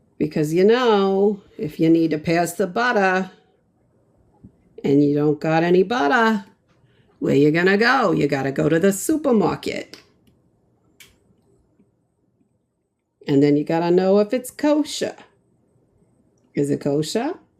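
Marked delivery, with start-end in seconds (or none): 1.6-17.3 New York way of talking. Showing how the speaker and a little brother like to talk together, new york accent. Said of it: "my little brother and I like to talk like this".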